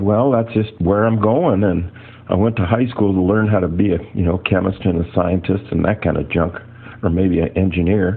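plain

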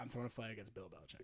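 soft, fast, worried murmur under the breath.

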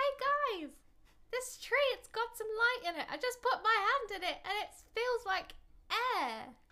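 calling out across distance. Calling out to companions who are far away: shouting to distant companions. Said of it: "So I'm gonna shout".

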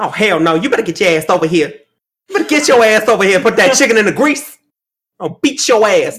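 loud, fast, full-sass scolding tone. Speaker recalls a cooking channel she had forgotten about: Auntie Fee impression.

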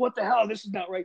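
acted irate yelling. Retelling a phone argument, acting out own yelling. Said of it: "I'm raising my voice on the phone and I'm yelling".

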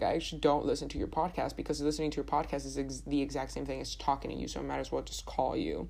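ordinary talk

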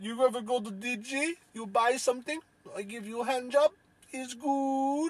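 very high-pitched put-on Eastern European woman's accent. Joking about Dollar General, doing an Eastern European woman impression. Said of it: "that's my impression of a Eastern European woman".

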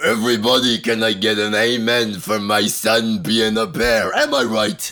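deep character voice, dropped low. Asked for a little taste of a favorite voice from the show, doing Scotty's dad voice. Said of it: "Give us a little taste".

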